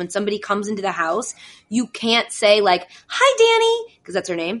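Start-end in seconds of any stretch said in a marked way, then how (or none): 3.1-4.0 very high-pitched, cutesy voice. Showing how people greet the dog when they come into the house, voice people use for dogs. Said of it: "If you say it in a voice like that".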